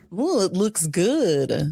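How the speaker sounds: slow, gross, creepy leering man's voice. Imitating the men who show up to the sting: imitating a gross, creepy man. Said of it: "the guys are always so gross".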